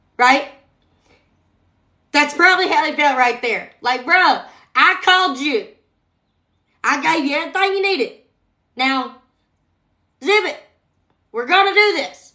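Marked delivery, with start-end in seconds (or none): 4.1-12.1 acted fed-up, angry, pitched-up scolding. Acting out the Lord telling Moses to zip it: imitating a frustrated Lord. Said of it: "it made the Lord angry".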